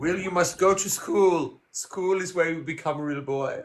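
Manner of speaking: put-on German accent. Playing a character speaking to a boy who wants to be real, in a German accent. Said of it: "Evan's German accent".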